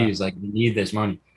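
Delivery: ordinary delivery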